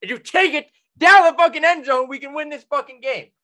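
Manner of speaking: put-on angry yelling. Acting out screaming at a cousin who drops the ball: imagined screaming at a cousin. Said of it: "I'm gonna scream at her and be like".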